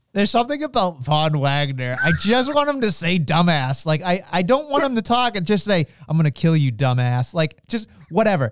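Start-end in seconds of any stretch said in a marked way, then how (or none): 6.1-7.4 deadpan delivery, much lower in pitch. Voicing the line he wishes Von Wagner would say, deadpan Von Wagner line. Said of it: "Just deadpan him".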